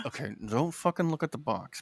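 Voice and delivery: secret-agent undertone. Retelling a warning to a brother while bidding, in a lowered super-spy voice. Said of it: "I lower my voice to like super spy level".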